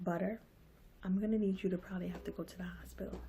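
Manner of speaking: very quiet, steady, calm, soothing voice. Speaker retells what he said to her, in a real calm voice. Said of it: "in a, a real calm voice".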